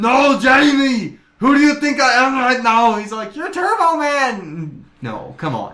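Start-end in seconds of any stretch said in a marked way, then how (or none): 0.0-3.0 put-on Austrian accent, loud and high-pitched. Retelling a movie scene, he answers Jamie in a put-on Austrian accent. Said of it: "dude with an Austrian accent".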